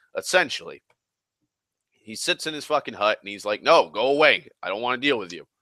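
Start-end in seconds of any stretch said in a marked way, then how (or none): 3.6-5.3 put-on grumpy, crotchety old grandpa voice. Speaker retelling a story imitates Luke turning people away, crotchety grandpa voice. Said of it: "Luke's a crotchety grandpa now".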